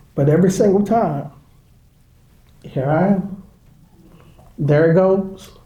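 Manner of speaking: tearful, voice breaking, crying through the words. Talking about a son and starting to cry: crying while speaking. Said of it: "There's those emotional tears".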